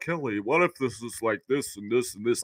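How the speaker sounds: mopey, deflated droning cadence, very low and soft. Speaker mocks a reporter's questions at the media scrum, doing a Michael Grange impression. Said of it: "even your cadence of your voice".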